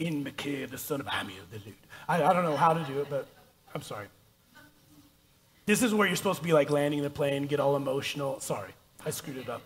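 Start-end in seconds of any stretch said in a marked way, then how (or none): 0.0-1.8 clumsy, low, soft, put-on Scottish accent. Reading a bible passage aloud, repeating a line in an attempted scottish accent. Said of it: "I just feel the need to speak like a Scottish accent".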